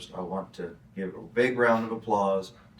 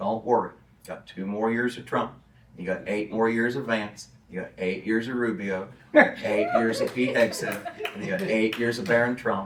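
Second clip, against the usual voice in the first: plain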